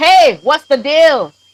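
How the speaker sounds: mock, high, drawn-out shouting. Speaker retells getting down and calling out to a fellow man, retelling a shout. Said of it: "I'm just shouting like".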